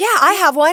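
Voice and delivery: high, loud, cheery reassuring tone.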